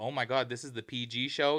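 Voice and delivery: put-on complaining tone. Retelling what the girls in the next seats said: imitating someone complaining. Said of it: "The girls next to us were complaining".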